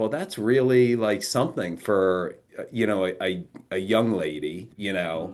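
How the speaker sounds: usual speaking voice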